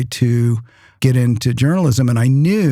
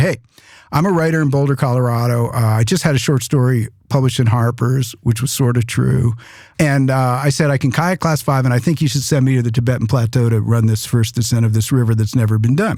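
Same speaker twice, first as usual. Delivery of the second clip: ordinary delivery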